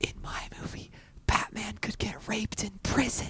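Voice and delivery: hushed, breathy whisper, barely above breath. A fifty-foot-tall character leans down to Nimue's ear, whispering. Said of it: "and I whisper".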